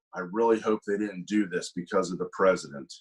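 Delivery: very low, muttered aside under the breath. Retelling what a man said to him in person: imitating someone muttering under breath. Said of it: "under his breath goes".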